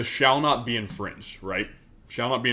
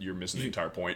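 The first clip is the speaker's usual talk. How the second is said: put-on deadpan delivery, much quieter; 3 semitones lower, 8 dB quieter than usual. Telling how they answer people who make that remark, retelling a deadpan reply. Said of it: "I literally look them deadpan in the face".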